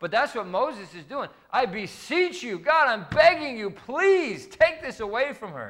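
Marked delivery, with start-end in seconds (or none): 1.5-5.7 play-acted, earnest pleading, high and slow. Speaker acts out Moses praying for her, to a room of parents; acting out Moses pleading. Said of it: "pleading for God to help her".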